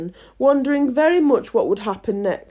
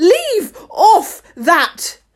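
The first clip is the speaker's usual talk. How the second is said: shrill, loud screaming voice; 6 semitones higher, 6 dB louder than usual. The queen, to the gardeners bowing to everyone, screaming. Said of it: "screamed the Queen".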